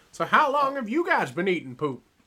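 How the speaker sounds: loud, high-pitched, swooping character voice. Joking about eating shrimp poop: Mister Goldenfold voice. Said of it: "doing a Mister Goldenfold voice".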